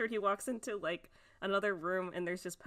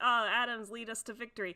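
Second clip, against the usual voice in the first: usual speaking voice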